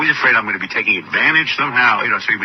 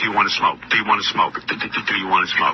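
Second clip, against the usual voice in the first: put-on muttering voice. Retelling how John kept asking to smoke: John muttering under his breath. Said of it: "He's muttering under his breath".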